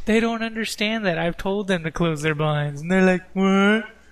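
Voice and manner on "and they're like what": mocking put-on voice, louder. Complaining about people who won't close their blinds, mimicking their reply mockingly.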